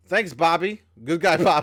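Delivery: loud, high laughing through the words. Finishing reading out a statement with a thanks, laughing while talking. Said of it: "you can't even say that without laughing".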